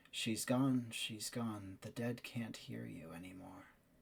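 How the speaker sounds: muttered under breath. Acting out your own voice reacting while Siri speaks, under the breath. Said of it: "under your breath in the same tone".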